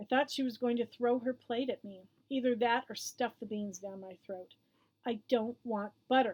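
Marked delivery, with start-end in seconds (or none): 5.0-6.3 jaw clenched hard, through gritted teeth. Narrator recounting a fight over butter on the green beans, through gritted teeth. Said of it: "I said through gritted teeth".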